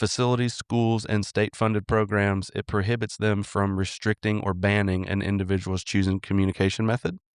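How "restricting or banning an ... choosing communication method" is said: normal talking voice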